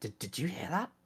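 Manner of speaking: soft, hushed, acted stage half-whisper. Playing a character under a table, asking another character quietly: half-whispering in character. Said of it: "I'm just gonna whisper to Ilya".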